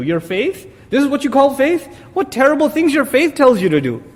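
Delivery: high-pitched, mocking sarcastic tone. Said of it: "He's being sarcastic with them".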